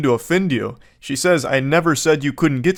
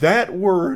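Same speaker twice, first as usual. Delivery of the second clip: voice cracks high on the word; 5 semitones higher than usual. Commentator reacting to a word in a clip, with a big voice crack. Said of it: "I had a big voice crack there".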